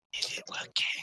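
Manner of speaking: soft whisper through sobs and tears. Voicing a character still crying after he walks away: whispering through crying. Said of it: "through the qui-, cry, she whispers".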